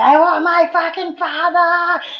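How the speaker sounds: mock very high, mean, drawn-out screaming. Recalling being given Demerol at fourteen, the speaker retells screaming for their father. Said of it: "I just scream".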